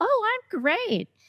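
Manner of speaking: very high-pitched reply. Acting out answering how are you, with voice jumping way up. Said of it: "my voice goes up about five octaves".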